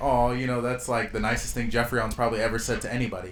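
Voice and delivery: ordinary talk, nothing marked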